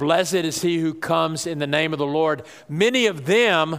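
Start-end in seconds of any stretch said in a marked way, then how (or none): none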